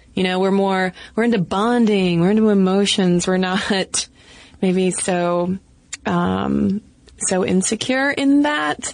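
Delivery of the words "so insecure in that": "so insecure in that" with uptalk, rising high. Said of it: "stating that as a question up talk".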